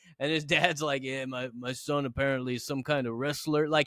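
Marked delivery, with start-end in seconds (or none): 1.0-3.7 mock flat, dull, unexcited tone. Retelling how a father introduced his son on TV: imitating a flat, unexcited tone. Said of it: "he couldn't be less exciting".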